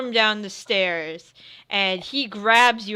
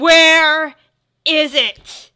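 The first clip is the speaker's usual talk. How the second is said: very loud, raised, furious, demanding voice; 7 semitones higher, 9 dB louder than usual. A storyteller voices a man shaking the player's character, demanding while shaking someone. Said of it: "He starts shaking you".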